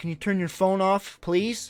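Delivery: acted rude manner. Retelling asking a man at the movie to turn off his phone, retelling a rude request. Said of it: "Probably said it more rude than that".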